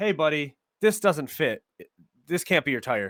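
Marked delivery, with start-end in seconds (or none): none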